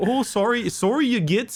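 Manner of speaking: put-on Canadian accent, very high pitch. Voicing an orc character while telling a story, with a canadian accent. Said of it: "but in a Canadian accent".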